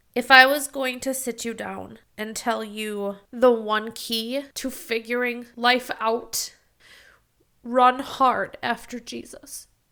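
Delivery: teary voice, welling with tears, choking up. Speaker, already tearing up, gives advice to the listener, teary. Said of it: "My eyes leak".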